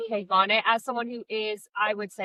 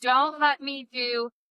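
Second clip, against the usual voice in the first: put-on bawling child voice, crying fit; 2 semitones higher than usual. Retelling a daughter's meltdown in the bathroom: imitating a bawling child.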